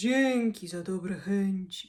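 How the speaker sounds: quiet mutter under the breath. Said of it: "mruknął Kłapouchy".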